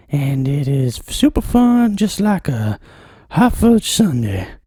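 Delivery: put-on high, sing-song voice with rising pitch. Podcast host doing his part of the show intro in a high-pitched voice. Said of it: "inspired me to do that part in a high voice".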